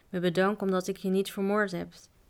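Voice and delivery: ordinary delivery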